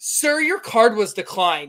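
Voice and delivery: acted out blunt, tactless, public-sounding delivery. Retelling how the lady announced the declined card: imitating a loud waitress. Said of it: "very loudly".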